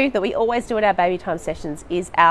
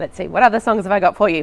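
usual speaking voice

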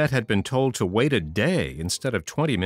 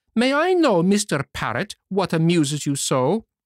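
high, angry outburst; 6 semitones higher than usual. Narrator voicing the marionette calling out to mr. parrot, crying out angrily. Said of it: "cried the marionette, angrily this time".

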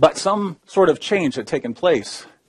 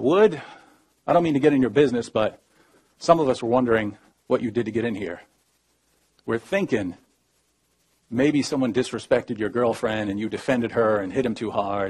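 usual speaking voice

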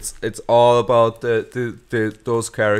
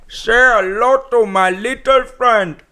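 put-on Indian-sounding accent, faster pace; 12 semitones higher, 6 dB louder than usual. After a joke about a bad impression, speaker repeats a movie line, Al Pacino impression sounding Indian. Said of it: "That was more like Indian".

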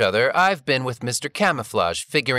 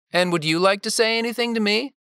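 mildly patronising, condescending tone, higher-pitched; 6 semitones higher than usual. Narrating Dane asking Lauren a question after her reply, somewhat condescending tone. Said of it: "Dane asked in a somewhat condescending tone".

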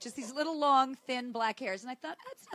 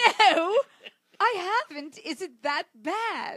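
very loud, drawn-out put-on British accent; 6 semitones higher, 9 dB louder than usual. Retelling answering back to a man who asked in a British accent; British accent. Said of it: "I answer back in a British accent".

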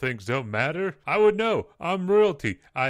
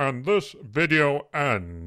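slow, deliberate narrator voice. Ending the video while doing an impersonation of the narrator. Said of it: "my impersonation of the narrator".

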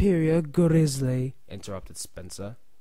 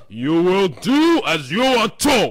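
slow, raised, deliberately spelled-out scolding; 3 semitones higher, 6 dB louder than usual. The director answers Gordon's protest, scolding. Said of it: "scolded the Fact Director".

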